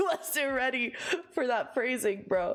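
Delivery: coughing through the words. Reacting to a game character's line, coughing out words. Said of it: "*coughing out words*".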